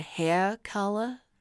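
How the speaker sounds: put-on man's voice with a Louisiana accent. Retelling what a hair replacement guy said: imitating a louisiana accent. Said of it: "and he's from Louisiana".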